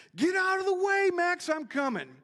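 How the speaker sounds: shrill, high, full-lung all-out yell. Retelling how someone yelled from the top of the hill: retelling a loud yell. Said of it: "he just yells as loud as he can".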